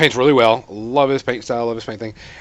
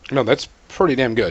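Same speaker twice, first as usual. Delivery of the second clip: ordinary talk, nothing marked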